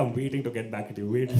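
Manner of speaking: usual speaking voice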